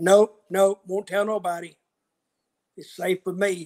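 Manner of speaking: imitated, put-on Southern accent. Retelling what a truck driver said: imitating a Southern accent. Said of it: "He had a real Southern accent".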